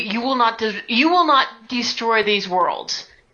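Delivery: furious, angry shouting. Commanding the spirits in a game scene: angry.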